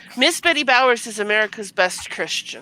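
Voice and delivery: heavy, dripping sarcasm, as sarcastic as possible. Introducing a figure to the other speakers, as sarcastically as possible. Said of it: "I'm saying that as sarcastically as possible".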